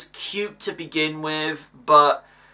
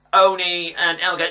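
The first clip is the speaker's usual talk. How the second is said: usual speaking voice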